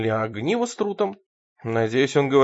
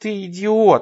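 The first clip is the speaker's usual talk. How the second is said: groaning, much higher; 6 semitones higher, 4 dB louder than usual. A narrator reads a spectator watching a boxing match on TV, groaning. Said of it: "простонала Бет".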